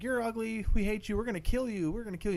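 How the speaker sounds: high, creepy toy doll voice. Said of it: "all the dolls are in their doll voice saying".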